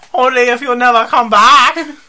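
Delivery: high-pitched little lady character voice. Redoing how someone's line sounded, Great Panda Adventure lady voice. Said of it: "You sound like a, that little Chinese lady".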